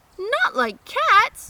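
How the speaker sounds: shrill, passionate voice. Reading Alice aloud, the frightened mouse answering Alice, shrill, passionate voice. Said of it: "in a shrill, passionate voice".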